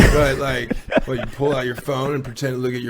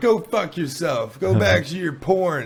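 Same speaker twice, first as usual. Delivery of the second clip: angry, hostile, furious tone; 4 semitones higher than usual. Retelling what a naked man shouted at the speaker, imitating an angry man. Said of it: "he's like angry flashing too".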